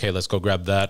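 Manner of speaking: usual speaking voice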